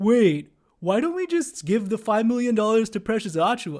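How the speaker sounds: high, put-on clueless-sounding voice. Mocking people with shallow takes on the game: imitating a clueless fan voice. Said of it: "I don't know why I'm using that voice".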